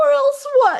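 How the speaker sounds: tiny, squeaking rat voice, very high. In a story read aloud, a rat answers her threat: squeaking rat. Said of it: "He squeaked".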